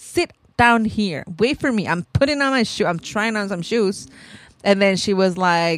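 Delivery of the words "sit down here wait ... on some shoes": ordinary delivery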